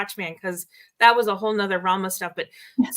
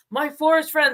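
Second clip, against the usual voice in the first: put-on sudden, ringing, loud, high call-out; 7 semitones higher than usual. Recounting how he suddenly spoke up to the group in the forest: retelling a loud call. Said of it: "And he said it really loud".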